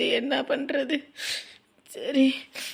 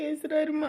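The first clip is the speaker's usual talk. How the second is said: softer, tearful sobbing through the words. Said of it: "அழுவாதம்மா".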